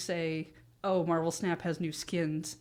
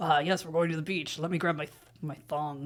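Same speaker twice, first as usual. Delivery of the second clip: very serious put-on superhero voice. Imagining the Thing packing for the beach: very serious Thing voice. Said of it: "very seriously being like".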